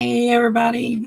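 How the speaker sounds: voice cracking and giving out as it starts. Greeting everybody at the start, voice giving out. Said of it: "my voice goes out with the first line".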